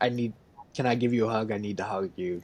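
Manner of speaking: put-on insistent woman's voice. Retelling a film scene where a woman insists on hugging him: imitating an insistent woman.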